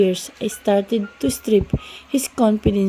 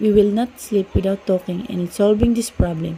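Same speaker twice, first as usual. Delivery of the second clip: ordinary delivery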